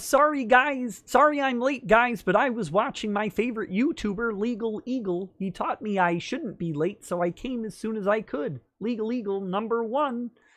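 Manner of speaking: high frog puppet voice. Reading a viewer's chat message aloud, in a Kermit voice. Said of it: "in Kermit voice".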